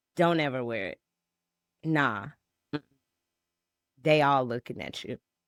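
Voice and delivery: mock stern, no-nonsense, matter-of-fact tone. Retelling a husband's remark about a church dress: imitating a stern, matter-of-fact husband. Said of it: "just so sternly, just so matter of fact".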